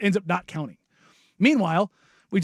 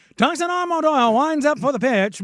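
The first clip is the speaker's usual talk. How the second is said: 1920s gangster voice, much higher; 7 semitones higher than usual. Recalling calling a player's games, announcing a pitch in old-timey 1920s gangster voice. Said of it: "I love an old timey nineteen twenties gangster voice".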